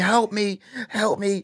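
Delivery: acted tearful crying, very high and drawn out. Retelling being high in a room, imitating own crying: imitating own crying plea. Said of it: "and I'm crying. Like".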